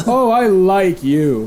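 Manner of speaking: slow, hearty laughter through every word. Game master voicing someone laughing from inside a coffin, hearty laughing. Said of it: "You hear a hearty laugh from inside".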